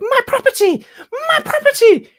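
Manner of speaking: piercing, shrill scream, very high and very loud. Retelling a viral clip of a lady shouting at drivers: imitating a woman screaming. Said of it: "screaming, like".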